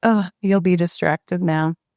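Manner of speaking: ordinary talk, nothing marked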